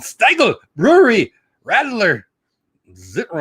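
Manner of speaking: mock angry German pronunciation. Reading German drink names from a menu: mock angry German pronunciation. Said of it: "You sound angry and, and like a World War Two movie when I speak in German".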